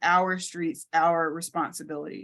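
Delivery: plain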